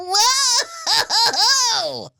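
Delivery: mock startled scream, very high, shrieking whoa. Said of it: "I was screaming in there".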